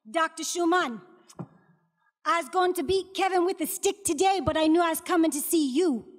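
put-on thick, strong Caribbean accent throughout. A doctor retells a patient's mother greeting him, in a strong Caribbean accent. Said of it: "she had the strong Caribbean accent".

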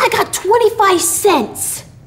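very high, proud, boastful tone. A little boy speaks up after a companion says his money is left behind: proud. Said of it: "said little Billee proudly".

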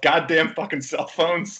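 abrupt, sudden, high shouted outburst. Retelling a movie scene where a character loses reception: imitating someone yelling. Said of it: "he just yells".

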